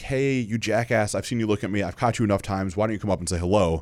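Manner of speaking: usual speaking voice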